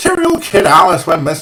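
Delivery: bad put-on Northern Irish accent. Trying out accents as a joke, in a bad Northern Irish accent. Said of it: "that's why I don't do accents".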